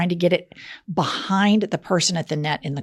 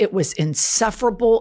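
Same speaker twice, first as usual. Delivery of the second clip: normal talking voice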